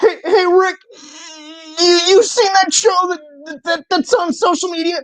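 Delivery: very high-pitched stammering voice. Speaker acting out a Rick and Morty exchange about a show, Morty voice, stammering. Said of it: "Here's Rick and Morty talking".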